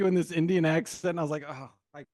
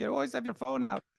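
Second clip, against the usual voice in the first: put-on Indian accent, higher pitch; 7 semitones higher, 4 dB quieter than usual. Imitating a son's impression of his mom: Indian accent. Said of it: "you would do an Indian accent".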